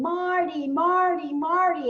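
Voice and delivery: high, loud scream, over and over. Retelling a camel ride, voicing the Bedouin calling his camel: imitating someone screaming. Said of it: "So he's screaming".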